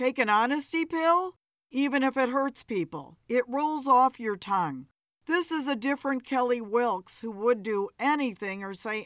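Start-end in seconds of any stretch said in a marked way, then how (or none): none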